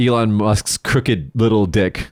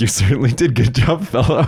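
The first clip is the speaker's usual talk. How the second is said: dry, sarcastic, laid-on mocking praise; 2 semitones higher than usual. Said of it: "with, like, a really sarcastic face, goes".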